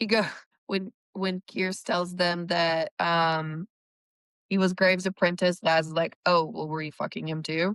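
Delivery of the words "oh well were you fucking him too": mild, throwaway muttered aside. Discussing a show, the speaker quotes a character's jab, retelling an under-breath mutter. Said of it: "Like under his breath".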